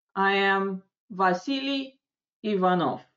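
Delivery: first name climbs, pause, then Иванов drops away. Lesson on saying your name in English: rise, pause, then fall on Иванов. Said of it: "Именно в восходящей интонации, потом небольшая пауза, фамилия на нисходящей интонации".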